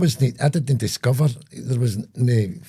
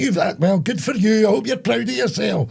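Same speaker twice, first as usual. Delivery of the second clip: mock very high, shrill, furious, scolding old woman voice; 10 semitones higher than usual. Retelling the granny scolding the boy who spoiled Santa: imitating an angry granny. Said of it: "my granny was fucking raging at the wee boy".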